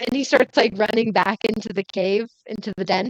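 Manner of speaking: usual speaking voice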